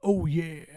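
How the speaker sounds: cartoon gorilla catchphrase-style voice. Imitating how Donkey Kong should sound in the movie: Donkey Kong voice. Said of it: "but Donkey Kong's like".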